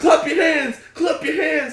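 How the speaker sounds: booming, shrill, loud, high hype-man yell. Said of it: "he's yelling into it".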